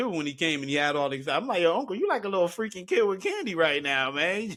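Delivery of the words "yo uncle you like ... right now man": acted, hyped-up, excited, playful, swooping teasing voice. Retelling own reply to an uncle's new scooter: retelling own excited words. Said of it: "I couldn't help myself but to get excited".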